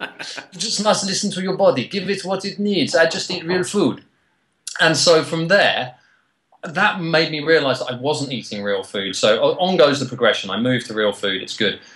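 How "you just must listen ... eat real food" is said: put-on, higher-pitched French accent. Repeating the Frenchman's advice after being praised: French accent. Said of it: "I like the accent".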